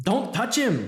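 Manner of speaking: high, terrified, frightened yell. Reading a story, a character shouts at another who bends to help the narrator: terrified yell. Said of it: "Gideon yells in a tone that confirms he is now terrified of me".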